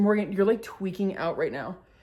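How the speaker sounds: plain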